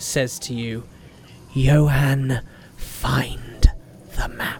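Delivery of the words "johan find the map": feminine voice. Game master voicing an unseen speaker at johan's shoulder, female voice. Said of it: "In a female voice".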